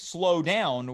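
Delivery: ordinary talk, nothing marked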